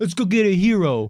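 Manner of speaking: put-on New York accent. Joking about not being from New York: put-on New York accent. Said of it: "Otherwise, I talk like this".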